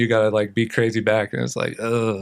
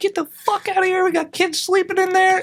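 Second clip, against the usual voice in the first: put-on very high, frantic, freaked-out outburst. Retelling how a lady came out to chase skaters off: imitating a woman freaking out. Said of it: "So she comes out freaking out".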